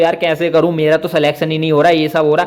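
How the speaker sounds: usual speaking voice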